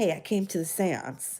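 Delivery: mock wry, deadpan, dry sarcastic tone. Retelling hearing a late grandfather's voice: imitating grandfather, sarcastic. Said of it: "his sarcastic way of".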